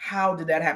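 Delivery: plain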